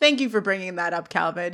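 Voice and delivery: ordinary delivery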